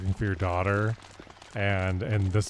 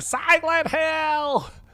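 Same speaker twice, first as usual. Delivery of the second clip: put-on high, slow, drawn-out scream in a little girl voice. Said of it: "we just do that".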